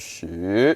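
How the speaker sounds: shoot starts low and climbs up. Learner practicing the tone they find hardest: rising tone on shoot. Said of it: "it like starts low".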